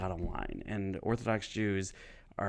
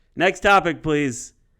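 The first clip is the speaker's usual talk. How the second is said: very loud, high-pitched yelling; 8 semitones higher, 14 dB louder than usual. Retelling a heckle from a crowd member: imitating a heckler yelling. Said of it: "this guy yells out".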